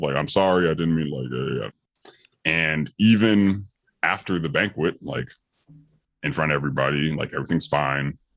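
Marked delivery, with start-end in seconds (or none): 0.1-2.1 put-on meek, submissive child voice. Retelling an apology to an angry mother on the phone: submissive child apologizing, retold. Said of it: "the very submissive child of".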